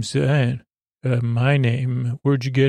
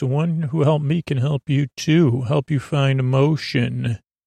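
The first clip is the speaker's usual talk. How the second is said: plain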